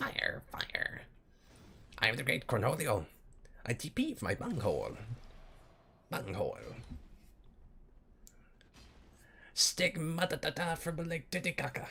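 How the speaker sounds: high, swooping cartoon voice. Recalling favorite lines from the cartoon, Beavis as Cornholio. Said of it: "Beavis impression".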